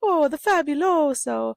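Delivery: very high, shrill, loud, jokey put-on Italian accent. Walking around a store with Callista, joking about a cleaner, in a mock Italian accent. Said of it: "talking in Italian accents".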